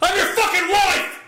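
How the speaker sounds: very high, bursting-out, fed-up exasperated shout. Imitating a silent wife who wants to burst out: imitating wife's outburst. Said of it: "really wants to jump out of her skin and say".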